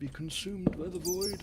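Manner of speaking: high-pitched, put-on dark wizard voice. Playing a game, repeating the line in a dark wizard voice. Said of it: "Made myself sound like a dark wizard".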